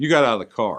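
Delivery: pitch drops away on the word "car". Contrasting two ways of asking about getting out, falling tone on 'car'. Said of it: "The voice falls at the end of the question".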